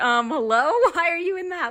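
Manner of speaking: acted-out puzzled, uncertain tone, pitched high. Retelling a grocery delivery that walked in mid-recording: retelling own confused words. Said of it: "I was so confused".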